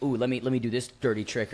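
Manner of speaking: ordinary delivery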